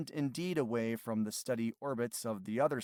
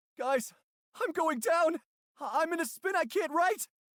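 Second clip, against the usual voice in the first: very high, loud, exaggerated worried panting alarm; 6 dB louder than usual. Going down in a spin, the speaker pants to the others with exaggerated concern. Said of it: "even more exaggerated concern in my tone".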